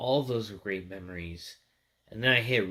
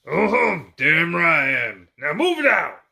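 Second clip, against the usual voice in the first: loud, high, swooping gruff bellow; 9 semitones higher, 12 dB louder than usual. Showing off Sergeant Johnson's hat from a Halo loot crate: gruff Sergeant Johnson voice. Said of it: "the gruff".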